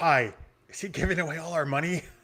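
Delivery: hushed half-whisper, aside. Half-whispering a worried question to a fellow player during a negotiation: half-whisper. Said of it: "I'm gonna whisper to Kwai".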